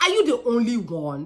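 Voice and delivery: Nigerian accent emerging. Asking suspicious questions of an employee, Nigerian accent coming out. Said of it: "I'm switching it literally".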